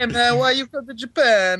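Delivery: put-on Jamaican Japanese accent, very high. Repeating a bit about foreigners in Japan, Jamaican Japanese accent. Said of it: "it's Jamaican Japanese".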